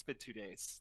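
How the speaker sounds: mumbled under the breath.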